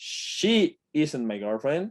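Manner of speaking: heavy emphasis landing on "she". Explaining English emphasis in Spanish, stress on the word she. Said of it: "con el énfasis en el she".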